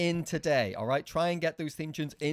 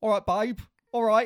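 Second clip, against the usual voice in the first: put-on Essex accent, higher and louder; 6 semitones higher, 7 dB louder than usual. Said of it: "when [name] did the Essex accent".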